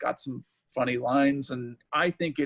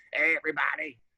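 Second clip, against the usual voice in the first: put-on dying old-man voice, at death's door. Complaining about the voices given to game characters: Mega Man dying old-man voice. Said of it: "sounds like a, an old man dying of throat cancer".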